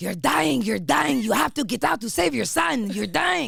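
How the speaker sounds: put-on thick French accent, loud and high. Recalling her French director urging her on during a scene, in a thick French accent. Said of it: "so he has this like really thick accent".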